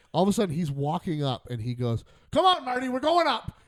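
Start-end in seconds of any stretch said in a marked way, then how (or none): 2.4-3.4 acted, loud, very high, carrying shout. Retelling a cousin calling him to go up and speak: imitating a loud call. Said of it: "And he says it loud".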